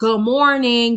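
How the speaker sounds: put-on sarcastic delivery. Retelling how a man greeted them as they walked into the kitchen: retelling a sarcastic good morning. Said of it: "it's like a sarcastic good morning".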